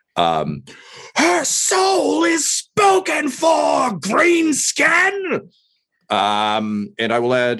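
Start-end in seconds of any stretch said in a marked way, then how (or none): 1.2-5.5 very high, spoiled, bratty, petulant shriek. Voicing a character in a fight, shrieking a taunt like Joffrey. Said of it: "shriek in, like, a Joffrey didn't get his way amount of, like, petulance".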